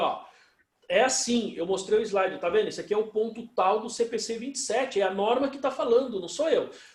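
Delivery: plain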